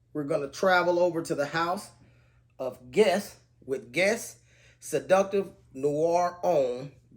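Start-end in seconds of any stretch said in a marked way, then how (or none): 2.6-6.9 slow, deliberate, careful, word by word. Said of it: "Very mouthful of words there".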